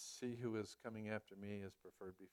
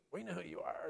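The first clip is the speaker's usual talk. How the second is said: put-on demon voice, pitched up; 8 semitones higher, 4 dB louder than usual. Retelling how the demons recognized Jesus Christ, in a demon voice. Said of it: "demon voice".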